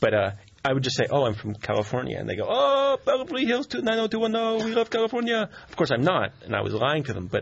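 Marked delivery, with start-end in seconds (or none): 2.5-5.5 put-on French accent, much higher, slower. Retelling how people replied on hearing the speaker was from California, French-sounding accent. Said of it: "What was that accent? That was French?".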